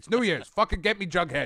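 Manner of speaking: put-on gruff boss voice. Doing a requested voice as a demanding comics publisher: J. Jonah Jameson voice. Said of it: "the Jameson voice".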